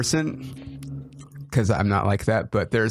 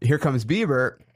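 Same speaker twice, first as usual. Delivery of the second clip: normal talking voice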